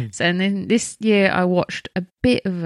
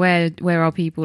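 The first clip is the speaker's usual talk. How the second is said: ordinary talk, nothing marked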